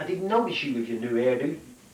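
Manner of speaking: ordinary talk, nothing marked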